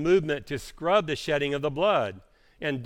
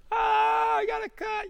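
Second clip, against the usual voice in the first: very high, very slow, drawn-out squeal. Describing someone coming into the house after a cut, mock squealing.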